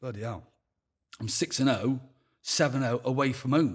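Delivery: normal talking voice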